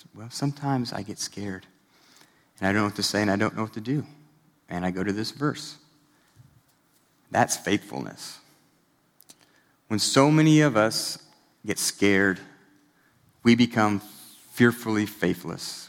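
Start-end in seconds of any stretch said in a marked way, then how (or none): 0.1-5.8 gentle, sweet, soft, quiet voice. Retelling asking a woman why a verse is her favorite: imitating Jordy's sweet, soft voice. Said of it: "She's got this sweet, soft voice".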